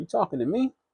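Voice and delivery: timid, frightened, scared voice, pitched high. Retelling a prison movie scene, imitating a scared question. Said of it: "And Claude's scared".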